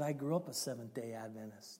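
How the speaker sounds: voice sunk into a low, dropped-down key. Retelling what a man said after asking about their church, imitating a low-key voice. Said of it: "dropped down to a low key".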